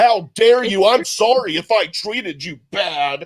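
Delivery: put-on indignant, defensive, grudging, insincere tone. Retelling how she got defensive with the men: imitating a defensive, insincere apology. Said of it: "she got defensive".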